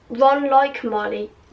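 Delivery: plain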